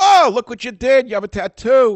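shrill, very high, very loud screeching. Telling a story about a nephew's tattoo, imitating Aunt Minna screeching. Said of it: "She screeches".

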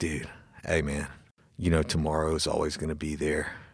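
hushed, soft, half-whispery inner voice. Asked by the host to reenact his inner 'bitch voice': half-whispered inner 'bitch voice'. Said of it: "it's like a whisper".

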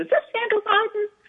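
thin, very high, squeaky man's voice. Speaker retelling an early-morning phone call, imitating the caller's high, squeaky man's voice. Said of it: "this really high, squeaky man's voice said".

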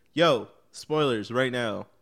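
put-on super serious, grave tone. Announcing spoilers are coming on the podcast: mock super serious tone. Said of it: "I like how you got super serious".

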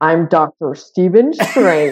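slow, drawn-out, put-on American accent. Showing how an actor sounds doing an American accent in a movie: Benedict Cumberbatch doing an American accent. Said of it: "That was my celebrity impression".

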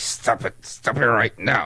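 very low, reprimanding, scolding voice. Retelling how mom reacted to joking in church: imitating mom scolding. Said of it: "she would just look and be like".

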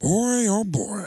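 slightly high rasping voice. Doing a quick impression after naming Al Pacino: raspy Al Pacino voice. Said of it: "Al Pacino is raspy".

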